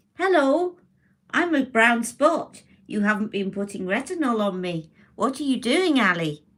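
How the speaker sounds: high-pitched talking character voice. A woman speaking as her own skin to herself: talking brown spot voice. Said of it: "I'm doing an impression of my skin".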